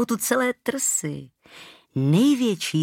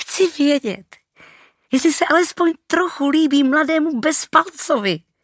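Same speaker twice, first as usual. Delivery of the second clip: high, rushed blurt, all in one go; 9 semitones higher, 4 dB louder than usual. Asked to say it herself, she finally answers her companion, blurted out. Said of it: "Vychrlila ze sebe Anči a znovu nasadila nervózně netrpělivý výraz".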